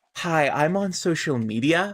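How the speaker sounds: shallow, superficial social-media influencer voice. Describing a shallow character who cares about social media, doing Alexis's social-media voice. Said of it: "kind of voice".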